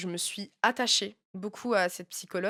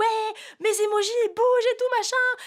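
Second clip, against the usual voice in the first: put-on very high, tearful sobbing; 5 dB louder than usual. Retelling a phone call with a guy while panicking, retelling own crying. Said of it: "je commence à pleurer".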